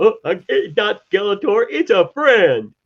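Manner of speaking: very high, slow, clueless, gullible-sounding voice. Mocking the heroes fooled by Skeletor's disguise: mock gullible heroes. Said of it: "and they're going".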